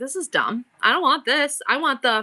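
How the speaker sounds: ordinary talk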